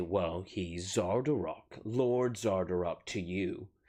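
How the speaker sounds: very slow, scornful, mocking delivery. Voicing a captive who names his lord father to the players: mocking, shaking his head. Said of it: "just kinda mockingly".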